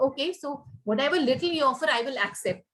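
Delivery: ordinary talk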